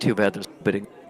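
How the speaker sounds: soft whisper close to the ear. Narrating a character who leans in during a hug and whispers. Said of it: "she leans in and she whispers".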